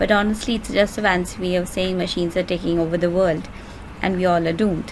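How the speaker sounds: ordinary talk, nothing marked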